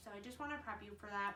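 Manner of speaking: fast, rushed talking. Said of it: "I know I'm talking fast".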